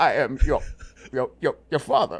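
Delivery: stuttering, repeating "your", then pushing through. Joking about a stutter: stuttering Darth Vader voice. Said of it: "It felt like someone's doing the Force".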